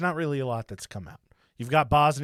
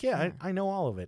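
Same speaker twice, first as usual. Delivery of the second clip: put-on upbeat smiling voice, higher and quieter; 5 semitones higher, 7 dB quieter than usual. Retelling a report, imitating Milosevic saying it in a very positive light. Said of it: "And he's just fucking smiling".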